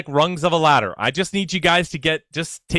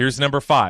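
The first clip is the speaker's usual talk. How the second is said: plain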